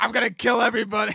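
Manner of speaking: mock unhinged furious outburst, loud and raging. Retelling a movie scene, imitating Ray Liotta freaking out. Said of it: "freaks out".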